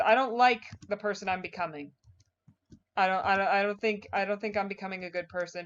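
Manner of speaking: plain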